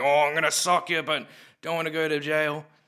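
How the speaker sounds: put-on drunken speech. Imitating a drunk person at two A M in Northbridge: imitating a drunk person.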